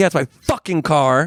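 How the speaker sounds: put-on mad answer back. Retelling a run-in with a cop over parking, quoting own reply: retelling own angry reply. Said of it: "And I'm all mad at him".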